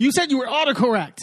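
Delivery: mock high, complaining, protesting yell. Retelling a contestant yelling at the producer: imitating someone yelling. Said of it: "he starts yelling at the producer".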